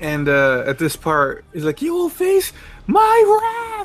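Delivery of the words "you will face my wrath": mock scream at top of lungs, much higher, slower. A fan acts out a character's line from the Ocean dub, imitating a character screaming. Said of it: "he's just screaming at the top of his lungs".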